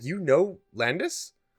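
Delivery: startled, shocked, surprised disbelief. Acting out another person's reaction to a line said in character, imitating shocked surprise. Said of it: "look at you like shocked".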